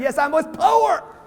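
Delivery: slow, high, proud tone. Showing the audience how they should say the line: proud. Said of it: "Say it like you're proud".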